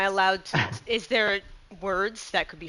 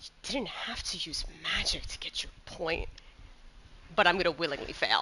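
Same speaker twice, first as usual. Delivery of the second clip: whispered, under-the-breath mutter; 2 semitones lower, 10 dB quieter than usual. Roleplayer voices a character who looks at him disappointed, muttered under her breath. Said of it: "just under her breath goes".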